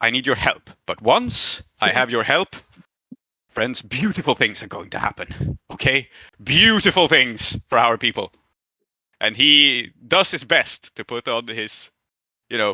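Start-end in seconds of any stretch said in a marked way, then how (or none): 0.0-8.3 put-on grand, impressive, stentorian orator voice. Voicing a character trying to look impressive: put-on stentorian voice. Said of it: "stentorian voice".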